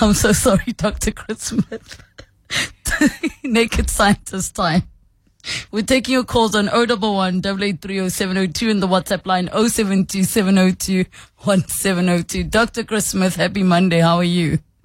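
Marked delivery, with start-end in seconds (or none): 0.0-4.8 talking through a laughing fit, higher. Starting a call-in segment, caught in a laughing fit: laughing while talking.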